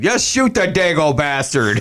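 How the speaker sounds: put-on Scottish accent with wide pitch swings. Quoting a favorite Untouchables line: quoting Sean Connery's Untouchables line. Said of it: "that line from Untouchables where he's like".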